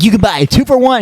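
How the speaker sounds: very high-pitched cartoon hero voice. Act out Roger Craig Smith doing a Pizza Hut commercial in a Sonic voice. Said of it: "He does a Sonic voice with the two for one shit".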